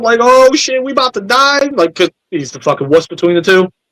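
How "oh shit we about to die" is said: mock high, freaked-out, panicked voice. Retelling a battle scene, voicing a panicking character: imitating someone freaking out. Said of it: "straight freaking out".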